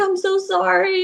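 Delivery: put-on crying, high and tearful. Retelling apologizing while being yelled at: imitating own past crying.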